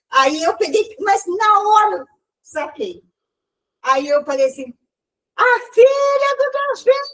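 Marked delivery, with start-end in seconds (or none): 5.3-7.1 play-acted bold yell, very loud, pitched way up. Retelling answering the figure who shouted: retelling own loud shout. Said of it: "Eu gritei bem alto pra ele também".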